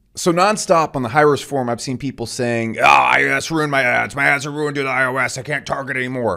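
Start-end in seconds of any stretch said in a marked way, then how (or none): 2.7-6.3 exaggerated, overdone mocking put-on voice. Mimicking people on a forum complaining: mocking overly deep voice. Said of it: "they're all doing it in that same overly deep voice".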